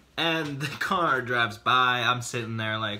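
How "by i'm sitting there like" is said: ordinary talk, nothing marked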